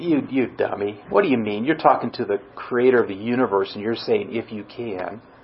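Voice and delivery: low, hushed, snarky tone. Speaker imagines Jesus answering someone who said if you can, mock-snarky Jesus. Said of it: "got real snarky and said".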